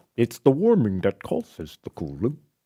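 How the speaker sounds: badly done politician voice, pitch swinging wide. Showing how to impress someone with a really bad Al Gore impression. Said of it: "like Al Gore".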